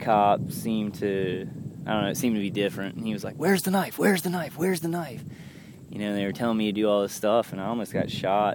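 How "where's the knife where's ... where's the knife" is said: high, urgent, repeated yell. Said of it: "And the guy yelled".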